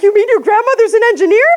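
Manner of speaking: acted, very high, fast, eager rush of excitement. Retelling an engineer's hopeful reply: imitating someone's renewed excitement. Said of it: "this renewed excitement and faith".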